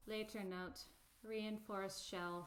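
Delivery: soft-spoken, quiet voice. Narrating a scene, voicing an unseen speaker, quiet voice. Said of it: "you hear a quiet vo- a quiet voice go".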